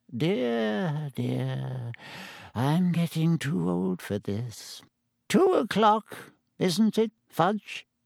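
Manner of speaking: put-on weak, frail, feeble old wizard voice, dear drawn out. A very old wizard speaks to Fudge near Hagrid's cabin, in a feeble old voice. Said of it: "said in a feeble voice".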